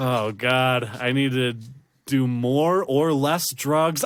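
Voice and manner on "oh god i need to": usual speaking voice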